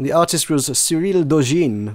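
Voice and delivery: put-on French pronunciation of a name. Show host naming a board game's artist, French accent on the name. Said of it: "my pronouncing with the French accent".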